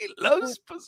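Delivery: high, lordly, mock nobleman voice.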